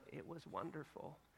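put-on soft, sweet grandmotherly voice. Speaker quotes Grandma's reply about dinner, imitating Grandma's sweet tone. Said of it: "Grandma always just had this really sweet tone when she used the word wonderful".

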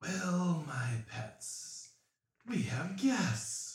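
rasping, raspy undead-style whisper. Narrating a scene, the storyteller voices a Lowall in a raspy whispering voice. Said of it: "He says in a raspering, whispering voice".

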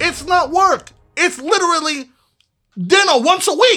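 forceful, aggressive, very high and slow. Insisting that joining the families is only a weekly dinner: aggressive. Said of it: "Why are you so aggressive?".

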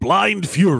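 dramatic movie-trailer announcer voice-over. Speaker tries his best movie voice guy on a title: movie voice guy impression. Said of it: "This will be my best movie voice guy".

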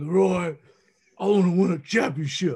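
raspy, rasping voice. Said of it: "he told me in that raspy voice".

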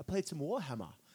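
put-on British accent. Imitating podcasters talking about their weekend games: put-on British accent. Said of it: "It's my British accent".

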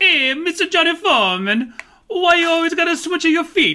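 very high, very loud exaggerated Italian American accent caricature. Showing off his own wacky character: wacky Italian American character voice. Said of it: "It's a character that I can do the voice of".

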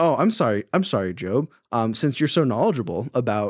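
play-acted, heavy, incredibly sarcastic tone. Retelling God's words to Job: imitating sarcastic God. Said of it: "he is being incredibly sarcastic right now".

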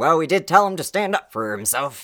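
twangy, sawed-off accent.

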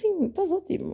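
teasing, mocking tone. Retelling looking down at a man and answering him, in a mocking tone. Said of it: "com este tom de gozo".

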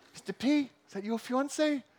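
put-on Maori-accented speech. Retelling what the giggling Maori kids asked: imitating Maori kids' accent. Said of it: "sorry about the accent".

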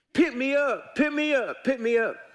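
high hollering frog voice calling out. Telling a story, a frog in the water calls to an old fisherman, frog hollering. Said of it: "a frog in the water hollering".

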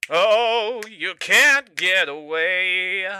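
taunting sing-song voice. Voicing the killer hunting his last victim: singsong taunting. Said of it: "Kyle sang".

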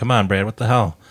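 normal talking voice

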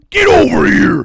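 shrill, very loud, high-pitched battle cry yell. Threatening a friend as a joke, acting out a fight move: Mortal Kombat style battle cry. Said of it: "Mortal Kombat style".

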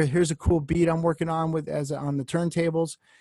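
plain

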